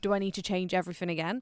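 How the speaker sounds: ordinary delivery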